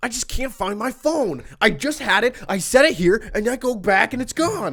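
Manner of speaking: mock frazzled father voice. Acting out their dad coming in the door, imitating a flustered dad. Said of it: "he's like flustered".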